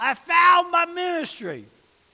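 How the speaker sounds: mock loud, high, drawn-out full-throated scream. Retelling a 96-year-old man standing up mid-lesson, retelling a man screaming. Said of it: "he starts screaming".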